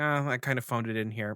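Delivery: plain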